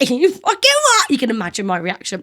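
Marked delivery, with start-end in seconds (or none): 0.0-1.1 mock, very high-pitched, shrill, abusive shrieking yell. Retelling a reply to a man who grabbed them: retelling own shouting. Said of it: "shouting abuse at him".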